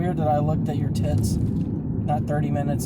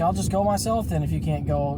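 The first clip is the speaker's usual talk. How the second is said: ordinary delivery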